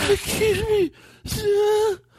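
very high, squeaked-up voice, pitched way up sweetly. Imitating how the comic asks the waiter for water: imitating Brian Regan. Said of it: "He's like this".

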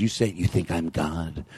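low, slow put-on voice. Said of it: "He goes".

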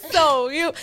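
high, slow, loud, blaming, accusatory voice.

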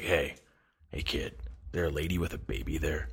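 rough, gritty, breathy whisper. Retelling a stranger's words on a payphone call: imitating a gritty voice. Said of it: "gritty voice on the other end of the phone is like".

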